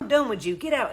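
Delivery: ordinary talk, nothing marked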